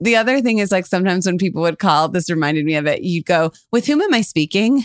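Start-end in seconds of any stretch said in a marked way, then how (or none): 3.7-4.8 proper, formal secretary phone voice. Retelling how one answered calls at home: imitating a formal phone secretary. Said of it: "you became this formal secretary on the phone".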